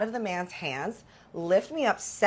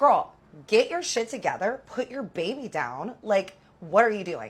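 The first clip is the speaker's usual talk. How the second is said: mad, angry, scolding ranting outburst. Retelling own words to a woman swinging at the speaker: imitating own angry words. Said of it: "I'm mad".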